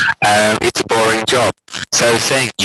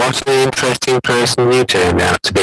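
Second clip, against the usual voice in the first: dull, bored drone, pitch falling step by step; 2 semitones higher than usual. Illustrating bored speech, like a staircase going down: bored, pitch stepping down. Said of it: "that's what it is when you're sounding bored".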